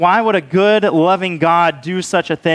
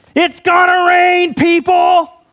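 put-on very high, stretched-out, drawn-out shout; 13 semitones higher, 4 dB louder than usual. Retelling how Dave suddenly yelled for all the campers to hear: retelling Dave's yell. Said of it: "Dave just yells".

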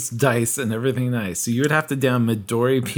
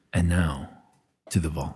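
very low, deep voice, right up on the mic; 8 semitones lower, 4 dB quieter than usual. Showing how to introduce the vault segment: deep voice, close to the mic. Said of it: "you just have to really get close and say".

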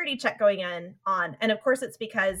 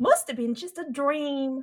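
put-on, close-enough Brooklyn accent with raised pitch; 5 semitones higher, 3 dB quieter than usual. Quoting a character's lines before commenting on the accent; Brooklyn accent. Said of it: "she says it in a Brooklyn accent".

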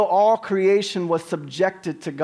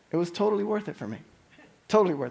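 soft, tearful speech, crying through the words; 7 dB quieter than usual. A husband describing his wife's reaction to his planned surprise, crying while speaking. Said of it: "Why am I crying?".

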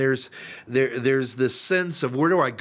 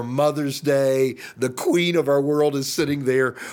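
ordinary talk

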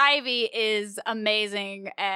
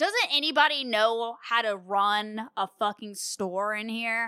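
normal talking voice

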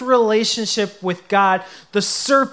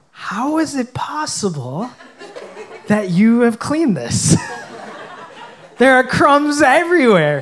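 put-on gentlest, unsmiling voice; 2 semitones higher than usual. Speaker quotes their partner inspecting the swept kitchen floor, mimicking her gentlest, smileless voice. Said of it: "in her most gentlest, smileless voice".

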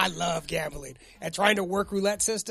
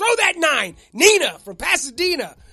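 imitated loud shouting, higher and louder; 9 semitones higher, 9 dB louder than usual. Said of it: "yelling and screaming at the craps table".

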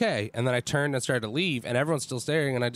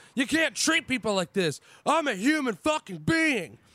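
put-on furious yell, higher pitch; 12 semitones higher than usual. Retelling shouting at a man in front of everyone at a party: retelling a furious shout. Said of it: "and I just shout".

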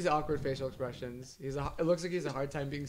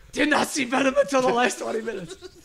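very loud, very high-pitched shouting; 10 semitones higher, 11 dB louder than usual. Asked to read a message the way it was typed, shouting in all caps. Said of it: "It's all caps".

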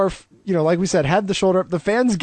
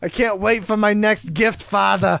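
put-on Boston accent. Recapping a wrestling vignette, Taskmaster talks to Father in his Boston accent. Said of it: "With his Boston accent".

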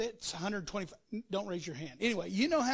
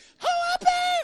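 very high, loud squeaky shout; 11 dB louder than usual. Reading the Goliath story, imagining Goliath shouting in a Mickey Mouse voice. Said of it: "If he's got this Mickey Mouse voice".

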